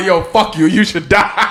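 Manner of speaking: very high, hostile, angry outburst. Quoting an angry person telling someone to die: imitating an angry person.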